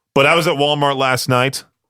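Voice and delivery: ordinary talk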